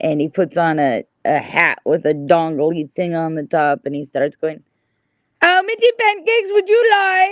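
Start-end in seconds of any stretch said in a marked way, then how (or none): 5.4-7.3 very high, put-on Swedish accent. Act out the man putting on a hat with a dongle on top, imitating the swedish guy. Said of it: "the Swedish guy".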